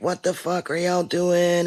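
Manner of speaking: screaming. Retelling what people at the shooting footage shout: imitating people screaming. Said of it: "you can hear people screaming".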